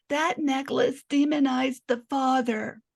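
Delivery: high, grating, irritating put-on voice. Quoting how a woman said something, in her voice: put-on annoying voice. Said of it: "this is how she said it because her voice is really annoying".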